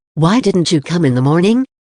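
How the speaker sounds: ordinary delivery, nothing marked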